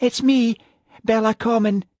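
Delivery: small, frightened, scared voice, very high. A caller on the phone says who it is, in a scared little voice. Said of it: "said a scared little voice".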